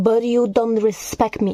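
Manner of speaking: ordinary delivery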